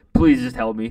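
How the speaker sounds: put-on voice, almost crying, pleading tone. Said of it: "almost in tears".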